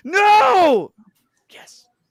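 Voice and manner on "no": high, loud, indignant shouted no. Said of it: "she was like".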